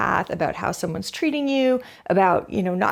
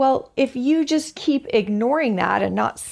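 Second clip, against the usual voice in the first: ordinary talk, nothing marked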